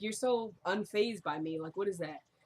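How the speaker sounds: plain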